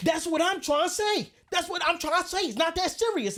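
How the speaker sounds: play-acted, very high, heated, riled-up yell. Retelling a parking lot argument, the other driver's reply: imitating someone yelling. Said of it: "but you're yelling".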